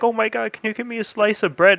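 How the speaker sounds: acted pitiful, high, pleading begging voice. Retelling how a grandmother on a diet asked for bread: imitating grandma begging. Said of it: "begging me for it".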